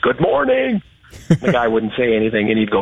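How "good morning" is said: loud, booming voice pitched very high. Retelling how a man greeted another guy every morning, retelling a big booming greeting. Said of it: "big booming voice".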